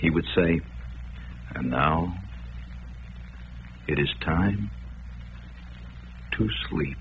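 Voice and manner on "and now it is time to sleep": very quiet, hushed radio announcer voice. Recalling a radio announcer's words over organ music, very quiet voice. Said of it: "say in a very quiet voice".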